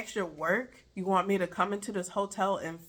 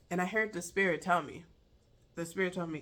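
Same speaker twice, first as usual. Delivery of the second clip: ordinary delivery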